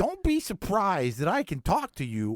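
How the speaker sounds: put-on very high, loud, cranky old lizard voice. Imitating a cranky old lizard character from a movie: Adam Sandler voice. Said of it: "That's a really good Adam Sandler voice".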